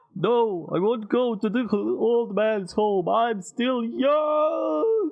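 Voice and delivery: put-on very high, very slow old-man voice. Mocking a game character called old man, imitating an old man. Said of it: "You sound like you're like".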